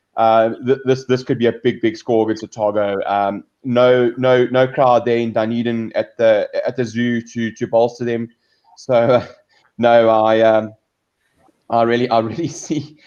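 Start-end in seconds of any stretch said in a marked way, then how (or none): 8.8-12.9 words breaking into laughter while talking. A host previewing a match laughs at someone's comment, laughing while talking. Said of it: "I'm laughing at Bruce Allen's comment there".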